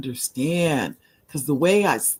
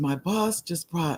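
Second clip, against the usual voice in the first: put-on whispering; 2 semitones higher, 5 dB quieter than usual. A speaker quotes a woman whispering from a bathroom, retelling a whisper. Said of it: "she's in the bathroom whispering".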